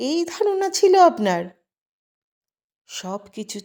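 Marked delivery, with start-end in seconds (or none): 0.0-1.4 surprised, astonished, much higher and louder. A woman replying to a man during a heated exchange, surprised. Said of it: "সন্ধ্যা অবাক গলায় বলে".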